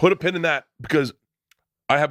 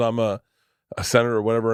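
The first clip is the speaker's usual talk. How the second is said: ordinary delivery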